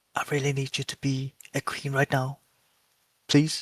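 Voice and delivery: hushed whispering. Narrating a card game, voicing a character speaking to a card: whispering. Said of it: "like whispers".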